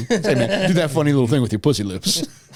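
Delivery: loud, high rock-and-roll idol voice. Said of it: "[name] used to talk to Forrest Gump".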